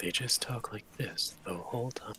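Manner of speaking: gentle ASMR-style whispering. Joking about an ASMR game character, a player shows how it talks: soft ASMR whisper. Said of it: "make a A S M R A S M R character".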